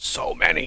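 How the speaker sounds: hushed whisper. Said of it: "And you have to whisper when you say that".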